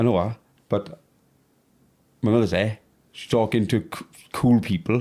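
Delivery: plain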